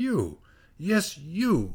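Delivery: curt, sudden. The concertmaster answers a taken-aback musician, abruptly. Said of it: "said the concertmaster abruptly".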